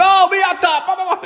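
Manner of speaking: very high-pitched, screamed, ranting tirade. Retelling how a driver reacted to being told off: imitating a man screaming. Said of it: "started screaming at me".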